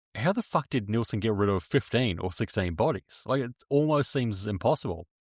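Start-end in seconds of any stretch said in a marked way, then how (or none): none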